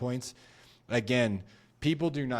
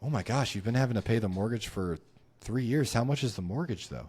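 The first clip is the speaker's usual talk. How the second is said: gentle tone of sympathetic concern. Speaking to a seller to get them to open up: concerned, caring tone. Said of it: "I'm using a concern tonality to get them to open up more".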